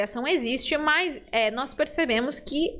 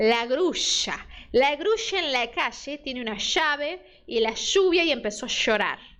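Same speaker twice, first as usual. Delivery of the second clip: Rioplatense Spanish accent, ll and y pronounced sh. Showing how people from Buenos Aires speak, Rioplatense 'sh' for ll and y. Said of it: "um porteño de Buenos Aires ou um uruguaio falando desse jeito".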